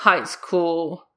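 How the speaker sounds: dismissive tone. Narrating a man's reply to a woman who went to high-school games; dismissive.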